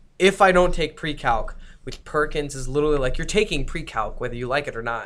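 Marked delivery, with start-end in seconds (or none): none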